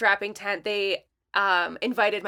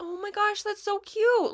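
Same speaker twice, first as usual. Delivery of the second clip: high, condescending, patronizing, cutesy so-cute tone; 12 semitones higher, 3 dB quieter than usual. Retelling how tech people react to the speaker's business, imitating their patronizing tone. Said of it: "they get this like, ... like tone".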